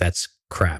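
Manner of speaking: normal talking voice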